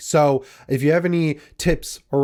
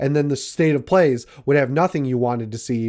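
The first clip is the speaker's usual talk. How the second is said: plain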